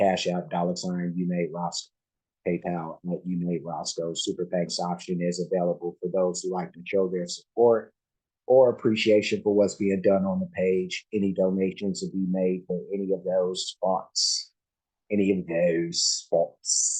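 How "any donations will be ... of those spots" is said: bad put-on English accent, slow. Host reading out donation options, in a bad English accent. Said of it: "That's my English accent, and I'm not very good at it".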